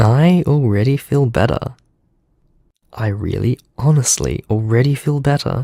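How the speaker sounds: glad, happy, cheerful delivery. Ricardo speaking after a phone message ends, happy.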